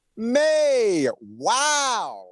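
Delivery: thrilled, mind-blown excitement. Saying two words as if just having won the lottery: thrilled like winning the lottery. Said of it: "say May and wow because you won the lottery".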